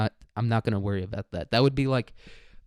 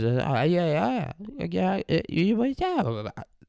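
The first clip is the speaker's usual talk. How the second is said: put-on very slow, drawn-out, swooping high baby babble; 7 semitones higher than usual. Imagining babies staring at abstract paintings, making a babbling baby noise. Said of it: "That was that was my baby noise".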